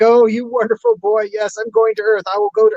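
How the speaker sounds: mock noisy, weepy blubbering, high and swooping. Retelling a scene where a father hugs his son, mock blubbering. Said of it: "he's blubbering and hugging his son".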